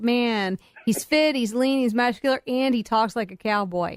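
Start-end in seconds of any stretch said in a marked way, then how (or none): none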